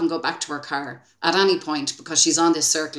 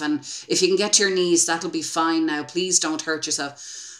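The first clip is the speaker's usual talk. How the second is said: ordinary delivery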